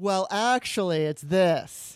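play-acted, loud, very slow, patronizing drawl. Imitating online mansplainers replying to a post: imitating a condescending tone. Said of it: "they have this condescending tone".

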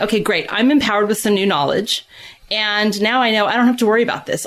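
plain

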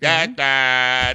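put-on loud teen-girl voice with one word drawn out. Imitating a 13-year-old answering her dad, in a 13-year-old girl voice. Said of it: "That's a 13-year-old girl voice".

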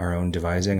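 ordinary delivery

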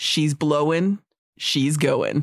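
very low, flat deadpan voice. Retelling a movie scene in the car looking at the volcano, deadpan Pierce Brosnan impression. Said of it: "Pierce Brosnan, deadpan, says".

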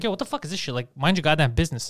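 ordinary talk

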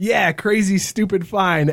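ordinary talk

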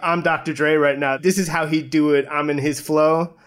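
normal talking voice

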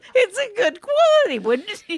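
talking through giggles, very high, slow, drawn out. Insisting a manager makes them laugh: laughing while talking. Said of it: "she makes me laugh".

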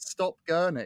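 high, mock, jeering yelled shout. Retelling a heckle at a football game: imitating a friend shouting. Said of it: "my friend shouting".

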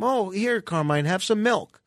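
ordinary delivery

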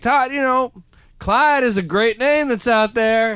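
put-on very high-pitched West Virginia accent. Retelling his father's reply about a baby name: imitating his father's voice. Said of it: "'cause that's how my dad sounds".

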